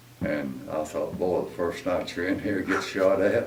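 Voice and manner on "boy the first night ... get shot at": ordinary talk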